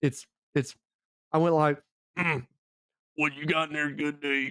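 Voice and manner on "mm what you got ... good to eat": soft, odd, peculiar tone held throughout. Retelling a call to a gas station made in another man's voice: imitating Carl's voice. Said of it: "I had to do that whole voice".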